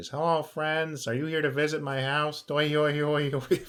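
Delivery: very high, tiny, squeaky voice. Voicing a little aquatic fae met in a cave, the speaker uses a sponge brick man voice. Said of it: "He's just a little sponge brick man".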